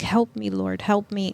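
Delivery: put-on tearful, crying voice. Retelling kneeling to pray for help, reenacting a crying plea. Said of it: "I'm just crying and I'm like".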